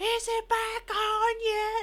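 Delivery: high, slow, drawn-out yell.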